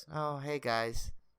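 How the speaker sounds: very soft, depressed, unreacting, glum tone. Retelling a guest at a table greeting them back, imitating a depressed Leah Thompson. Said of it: "just didn't want to smile".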